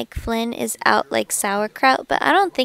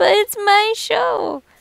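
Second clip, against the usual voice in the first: put-on sad voice, cracking, much higher pitch; 10 semitones higher, 4 dB louder than usual. Quoting what he just said in protest, mock-sad with voice cracking. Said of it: "that sounded so sad with your voice cracking".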